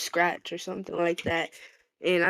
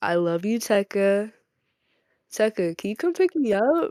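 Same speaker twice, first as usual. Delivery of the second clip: put-on girly voice; 3 semitones higher, 4 dB louder than usual. Demonstrating the voice used for making tags, tag girl voice. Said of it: "don't make me put on my tag girl voice".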